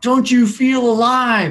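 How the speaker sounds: high, drawn-out yell at the top of the lungs. Retelling a friend's line at two in the morning: imitating someone yelling loudly. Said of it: "yelled at the top of her lungs".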